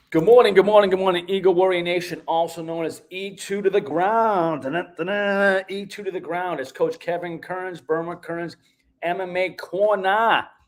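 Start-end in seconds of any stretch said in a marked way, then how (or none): 9.1-10.5 fake Boston accent, very slow and drawn out. Introducing the show's name: put-on Boston accent. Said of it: "Corner with a Boston accent".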